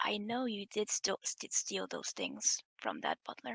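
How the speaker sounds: half-whispered, faint, barely audible. Speaking in character into another character's ear: half-whispering in character. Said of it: "I whisper to him into his ear".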